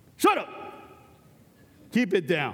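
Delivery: boisterous shout. Speaker retelling himself hushing a noisy group on a bus, retelling a boisterous shout. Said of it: "I've got this really boisterous voice".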